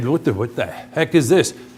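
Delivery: irritated, fed-up, exasperated outburst. Parent retelling their own reaction to pressure, retelling getting annoyed. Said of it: "now I'm getting annoyed".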